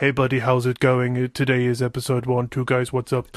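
small, flat, little toy-robot voice. Podcaster retelling how he opened episode one: little robot voice. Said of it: "Little robot".

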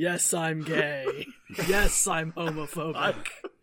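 put-on voice, dropped low and kept soft. Joking about t-shirt text, a speaker reads it in a Christopher Lee voice. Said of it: "Christopher Lee voice".

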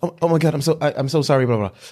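shy, bashful, stumbling over words. Retelling a cartoon scene where a shy boy apologizes: imitating a shy apology. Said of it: "he always shy".

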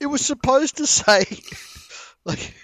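high, loud mock bawling. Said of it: "And she goes".

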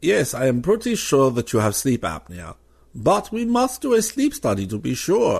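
put-on refined German accent, sing-song. Retelling what the doctor said after the sleep interview, in a classy German accent. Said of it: "I thought I'd give him a classy German accent".

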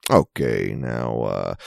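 very low, deep, creaky, soft mid-Atlantic Appalachian drawl. Showing how people whose training goes back to Chuck Yeager talk, do a Chuck Yeager impression. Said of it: "that mid-Atlantic fucking Appalachian just like".

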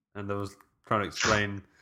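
normal talking voice

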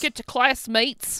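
put-on Australian accent. Retelling a scene where the principal speaks in an Australian accent: Figgins Australian accent. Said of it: "Figgins arrives and has an Australian accent".

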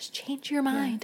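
acted-out whisper. Picturing him coming up beside Violet, whispering a retold line.

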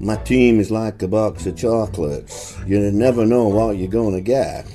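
questionable slow, drawn-out Southern drawl. A man joking about his team at a press conference: questionable Forrest Gump impression. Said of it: "questionable impression of Forrest Gump".

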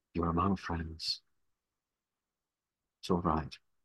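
gentle, soft, hushed half-whisper. Player character half-whispering to a fading ethereal creature in their arms: half-whispering. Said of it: "I'm whispering down sort of into its ethereal form".

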